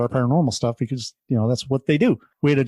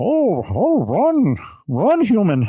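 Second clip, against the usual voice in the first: clumsy, put-on monster voice, high and swooping; 8 semitones higher than usual. Telling a story where Bigfoot stops and looks at her: Bigfoot voice. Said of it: "I don't do a good Bigfoot voice, but".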